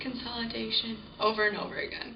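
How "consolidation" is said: much softer whisper, as if asleep. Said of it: "he would just whisper to himself".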